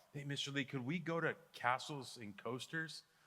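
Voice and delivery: timid, meek, sheepish, soft and quiet. Retelling how a student raised his hand to ask the teacher, imitating a sheepish quiet kid. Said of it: "says it like real sheepishly, like real quiet".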